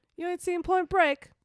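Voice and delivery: very high-pitched put-on British accent. Quoting a movie line to another speaker: British accent. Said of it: "That was my British accent".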